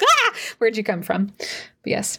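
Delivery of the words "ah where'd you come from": squeaky little voice. Bert reacts as someone slides out of a grate, squeaky Bert voice. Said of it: "as Bert is like squeaky".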